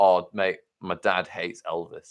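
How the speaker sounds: mock bone-dry deadpan, low and flat. Retelling how he answered the idea of playing [name], retelling a deadpan remark. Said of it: "looks at me and deadpan just goes he goes".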